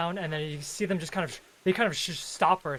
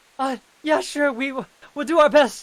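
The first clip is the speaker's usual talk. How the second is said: very high, loud, panicked, frightened stammer; 10 semitones higher, 11 dB louder than usual.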